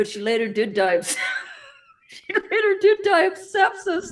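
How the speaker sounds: talking through laughter. Telling how a former child co-star later died: laughing while talking. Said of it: "I'm sorry I'm laughing".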